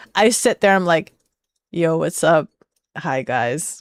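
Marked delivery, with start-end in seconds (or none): 1.8-3.8 put-on listless, zero-effort tone, low and soft. A streamer imitates their off-stream self greeting viewers, mock low-energy greeting. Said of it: "I do not exert energy".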